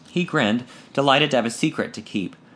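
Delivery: ordinary delivery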